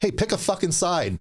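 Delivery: mock very high, full-throated, top-of-lungs yell. Retelling a sergeant calling down a hallway: imitating someone yelling loudly. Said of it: "he yells out at the top of his lungs".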